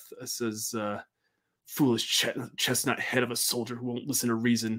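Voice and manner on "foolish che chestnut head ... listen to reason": muttered under breath, quieter. Voicing Elizabeth as a soldier leaves: muttering under her breath. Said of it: "Elizabeth kind of under her breath".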